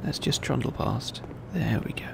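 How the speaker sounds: very soft, creaky whisper under the breath.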